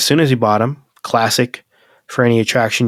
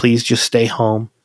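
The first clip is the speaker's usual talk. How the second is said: put-on terrified, frightened voice. Retelling the fiancée begging him not to leave for work: imitating a terrified plea. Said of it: "She was so terrified".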